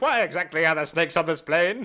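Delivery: put-on huffy, indignant voice, high-pitched. Retelling a movie line: imitating an indignant complaint. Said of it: "indignantly complain about cold food".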